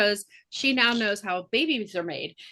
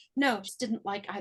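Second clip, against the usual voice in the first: imitated character muttering, quieter; 7 dB quieter than usual. Retelling a scene of Penelope talking about Aunt Petunia: imitating Penelope muttering under breath. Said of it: "she's under her breath".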